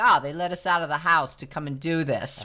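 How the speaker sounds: put-on New Jersey accent. Retelling a joke by an older hiker: imitating a Jersey accent. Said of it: "they all have the Jersey accent".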